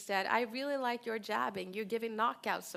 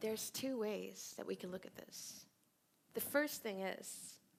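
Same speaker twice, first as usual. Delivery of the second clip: painfully drawn-out, very slow, quiet, unhurried; 8 dB quieter than usual. Retelling how an expert answered a journalist's question: very slow answer. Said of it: "he really took his time".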